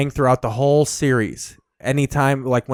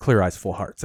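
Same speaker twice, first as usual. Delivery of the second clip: quiet, understated, low-key hushed delivery; 6 semitones lower, 4 dB quieter than usual. Retelling the end of a speech to a losing team: imitating a quiet delivery. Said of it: "he just quietly goes".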